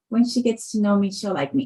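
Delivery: normal talking voice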